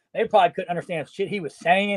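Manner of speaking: usual speaking voice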